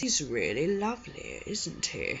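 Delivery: unsettling, creepy put-on voice with swooping pitch. Retelling a story, doing this guy's voice: put-on creepy voice. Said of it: "I have to do his voice because I have to attempt to just to get give you the feeling of how creepy this guy is".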